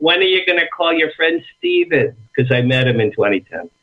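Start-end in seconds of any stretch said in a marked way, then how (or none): 0.0-2.2 put-on insistent elderly woman voice, high and swooping. Telling a guest how his mother pesters him to call a friend, imitating his mother. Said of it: "My mother goes".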